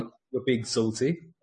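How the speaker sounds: ordinary delivery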